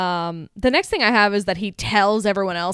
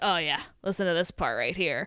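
put-on chilling villain voice, lower and quieter; 4 semitones lower, 8 dB quieter than usual. Quoting the villain's line while a woman dies on tape: imitating Eddie's bone-chilling delivery. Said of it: "'cause I said it how he says it".

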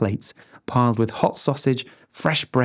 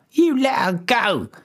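very high, drawn-out scream; 10 semitones higher than usual. Reading a story, voicing a small girl hanging from a man's neck: screamed. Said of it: "screamed the girl".

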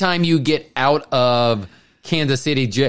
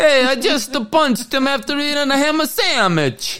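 very high, put-on Italian accent; 12 semitones higher than usual. Voicing one of the Mario characters during a bit, in an Italian accent. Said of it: "whether I sounded Italian or not".

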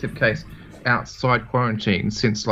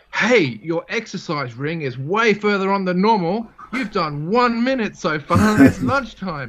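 smug, mocking, high, sing-song sarcastic nag; 8 semitones higher, 3 dB louder than usual. Quoting what your fitness watch says to you at lunchtime; mock-sarcastic watch voice. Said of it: "Seriously sarcastic".

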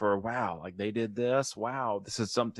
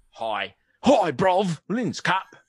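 put-on cockney accent, pitched much higher; 7 semitones higher, 7 dB louder than usual. Retelling how Jude Law answers at the end of the movie, Cockney accent as Jude Law. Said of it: "I'm from Cockney".

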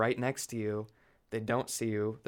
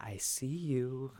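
sinister, creepy, stalking villain voice; 3 semitones higher, 4 dB quieter than usual. Retelling how a friend playing the killer taunts: imitating a friend's creepy voice. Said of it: "He's doing his creepy voice".

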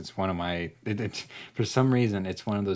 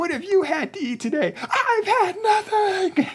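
mock freak-out yelling, much higher, louder; 6 dB louder than usual. Retelling a woman's outburst in a video, imitating a woman flipping out. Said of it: "she's flipping shit".

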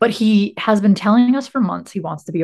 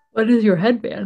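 speaking mid-yawn, yawning through words. Asking the other speaker about their headband costume, yawning while speaking. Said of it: "I'm sorry, I'm yawning".

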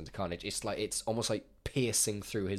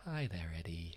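creepy calm whispery serial killer voice, quieter; 2 semitones lower, 8 dB quieter than usual. Imitating Cletus greeting Eddie: creepy whispery Cletus voice. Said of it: "a little bit more of a whispery voice".

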